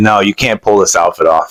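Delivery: normal talking voice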